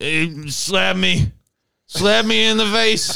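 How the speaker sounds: put-on slow, creaky, monosyllabic drunk talk, word at a time. Retelling what a very drunk older friend kept saying: imitating a drunk friend, monosyllabic. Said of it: "speaking monosyllabically 'cause he's so drunk".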